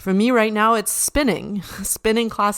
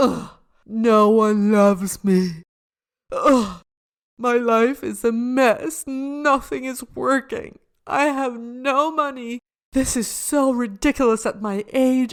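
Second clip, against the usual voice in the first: slow, dramatic, wallowing woe-is-me self-pity; 4 semitones higher than usual. Acting out someone in self-pity, mock self-pitying, dramatic. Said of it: "that's what you do when you're in self-pity, is like".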